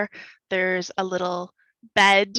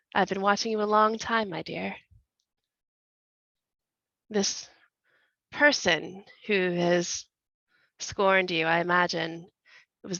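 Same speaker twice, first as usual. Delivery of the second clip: very deep, comforting, soothing voice; 3 dB quieter than usual. Voicing a handsome priest greeting a scorned woman: very deep, comforting voice. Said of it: "in a very deep and comforting voice".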